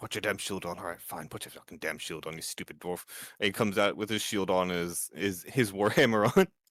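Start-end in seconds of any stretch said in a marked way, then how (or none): 0.0-3.0 muttering under breath, much quieter and faster. A character comes out from behind a rock, muttering. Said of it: "he's just like muttering".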